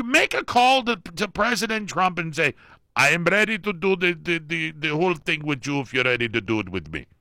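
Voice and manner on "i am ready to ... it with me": poor put-on Iranian accent, higher pitched. Imagining Iran calling President Trump, the speaker does a poor imitation of Iranian accent. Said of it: "a poor way of speaking like an Iranian".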